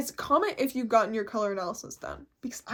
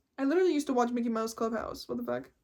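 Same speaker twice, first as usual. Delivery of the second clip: usual speaking voice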